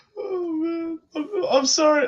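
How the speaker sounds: very high, very drawn out, spoken through giggles. Apologizing for laughing at someone's Super Bowl memory: laughing while talking. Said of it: "I can't stop laughing".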